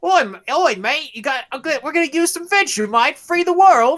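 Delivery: put-on Australian accent. Describing the token Australian in a game, imitating his line in an Australian accent. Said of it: "they have the token Australia. He's like".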